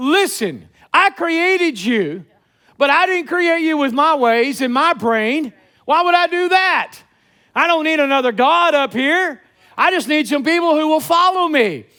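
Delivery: mock sarcastic tone. Paraphrasing what God says in the scripture passage, acting out God's sarcasm. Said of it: "You can almost pick up the sarcasm here".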